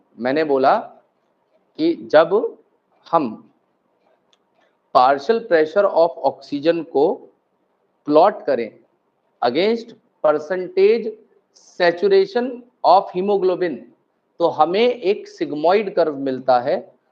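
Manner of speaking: slow, deliberate, unhurried, word by word. Repeating the explanation for the class, speaking slowly. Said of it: "मैं धीरे धीरे बोल दे रहा हूं।".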